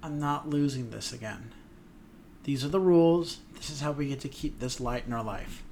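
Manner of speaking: ordinary delivery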